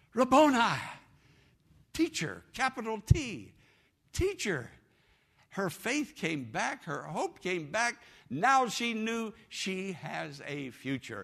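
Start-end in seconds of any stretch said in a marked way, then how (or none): 0.2-2.5 put-on joyful loud cry, much higher, louder. Retelling a woman answering when Jesus spoke her name, acting out a loud, joyous cry. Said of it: "with a loud, joyous voice".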